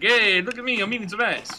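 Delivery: bad fake Italian accent. Joking about adding garlic salt to food, bad italian accent. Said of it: "That was the worst Italian voice ever".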